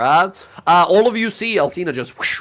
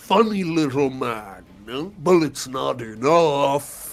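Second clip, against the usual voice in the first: slow, drawn-out villain voice with a cackle. Running the game, the speaker voices Big Man Moloch's final legendary action, cackling. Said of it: "he cackles to himself".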